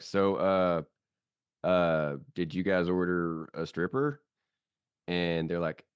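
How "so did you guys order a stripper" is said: ordinary delivery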